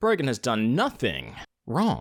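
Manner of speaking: very slow, drawn out, widely swooping pitch. Offering another way to read a title line: Christopher Walken version. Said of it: "the Christopher Walken version".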